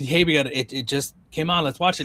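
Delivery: plain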